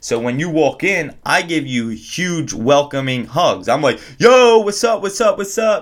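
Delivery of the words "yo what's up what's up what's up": very high, high-energy, hyped-up voice. Describing how they welcome guests arriving at their hotel room: high-energy greeting voice. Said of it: "high energy, high frequency vibration in my fucking voice".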